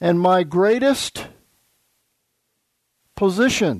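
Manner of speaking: greatest stressed, drawn out slow and weighty, preacher-like. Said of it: "I emphasize the word greatest".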